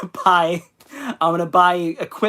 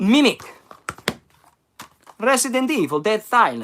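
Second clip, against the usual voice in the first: swooping Eastern European accent, Romanian-Italian style; 4 semitones higher than usual. Speaker listing genre film titles in an eastern european accent. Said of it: "I'll stop doing that, that accent".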